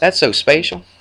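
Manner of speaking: put-on West Virginia accent. Introducing a lesson on triangles, quoting their grandmother, imitating grandmother's West Virginia accent. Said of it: "because she's from West Virginia".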